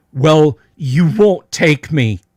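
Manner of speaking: loud, terrified shrieking in utter despair. A game master voices a young slave woman confronting the players: screaming. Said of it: "and she screams".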